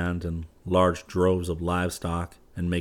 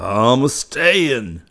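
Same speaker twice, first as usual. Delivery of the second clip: wild, bellowing roar, very loud and high-pitched; 6 semitones higher, 8 dB louder than usual. Yuma, after a wild yell that rings through the house, roaring. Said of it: "he roared".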